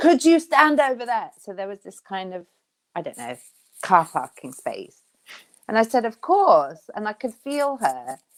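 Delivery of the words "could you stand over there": mock nervy, high, anxious shout. Retelling a woman's call on a narrow path while walking the dog, imitating an anxious shout. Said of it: "it was a very anxious voice".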